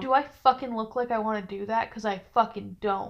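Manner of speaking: ordinary talk, nothing marked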